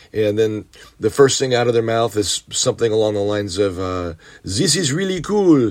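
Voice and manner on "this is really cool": put-on French accent, higher pitch. Retelling what two hitchhikers said on getting into the car: imitating a French accent. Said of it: "they're speaking with a, a French accent".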